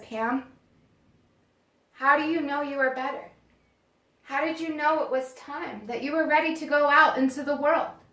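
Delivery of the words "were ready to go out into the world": ordinary talk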